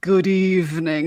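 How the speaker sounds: overly slow, deliberate, drawn-out stock narrator voice. Mocking the trope of narrators who read slow: imitating overly slow narration. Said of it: "people who read slow are like".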